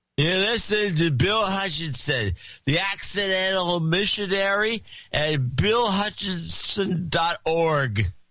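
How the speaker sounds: put-on drunken delivery. Asked to redo the line in a drunk voice, speaker does it in a fake drunk voice. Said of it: "did it in like your drunk voice".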